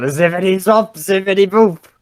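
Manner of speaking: high, long, stretched-out, drawn-out yell. A character yells while walking into a busy store, yelling. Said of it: "I'm gonna yell".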